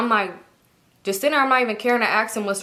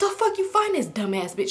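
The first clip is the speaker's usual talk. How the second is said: acted out, fed-up, furious, angry. Retelling her reaction to hearing the woman's age: imitating her angry past self. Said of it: "So I'm pissed off".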